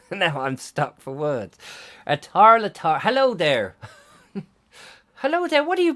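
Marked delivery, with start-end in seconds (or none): 2.0-5.9 stock put-on stage-Irish accent, cliché, pitched high. Trying to get an Irish accent into your head, a cliche Irish accent. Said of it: "the only Irish accent I've got is a sort of cliche Irish accent".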